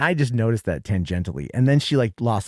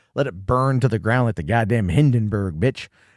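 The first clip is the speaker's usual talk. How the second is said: ordinary talk, nothing marked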